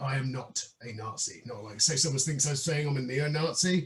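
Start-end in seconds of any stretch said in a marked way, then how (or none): 0.0-1.4 slow, low, deliberate, drawn out word by word. A speaker making a point clear to others in conversation: said slowly. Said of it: "I better say it slowly".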